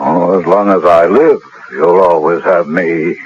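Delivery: peculiar, tragic inflection. Answering a refusal to bear another child: tragic inflection. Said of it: "that peculiar tone of voice and tragic inflection".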